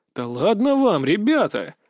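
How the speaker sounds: sly, snide, mocking, needling. The narrator addresses two shaken young men, snide and smirking. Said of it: "ехидно улыбнулся я".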